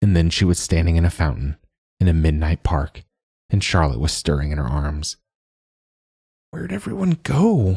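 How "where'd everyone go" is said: very high, words slurred with sleep. Narrator voices a character stirring awake in someone's arms, words slurred with sleep. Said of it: "words slurred with sleep".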